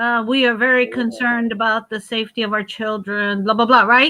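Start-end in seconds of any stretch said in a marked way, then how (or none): 0.3-3.4 acted wooden, stilted, read-off-the-page delivery. Retelling a video where someone reads a statement aloud: imitating someone reading stiffly. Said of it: "you can tell she's reading".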